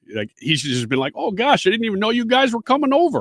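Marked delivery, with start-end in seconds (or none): 1.1-3.2 put-on very high voice with Upper Midwest accent. Acting out a host greeting unexpected guests: Upper Midwest accent. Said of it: "sound like he's from the North Midwest".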